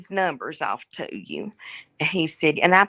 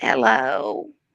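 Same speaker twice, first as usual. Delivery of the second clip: put-on sweet little old granny voice; 5 semitones lower, 3 dB louder than usual. Answering the phone when the unwanted caller rings, in a little old lady voice. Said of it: "I got my little old lady voice on".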